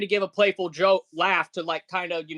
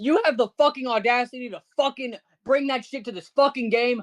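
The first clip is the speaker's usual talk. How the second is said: put-on, heated, angry half-shout, pitched up; 5 semitones higher than usual. Retelling yelling at someone who brought trouble to the game: retelling own yelling. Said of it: "but I'm yelling".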